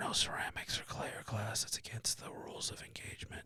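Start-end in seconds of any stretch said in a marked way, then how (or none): 0.0-1.6 hushed, quieter whisper. Joking about the rules of engagement: whispering. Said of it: "You have to whisper".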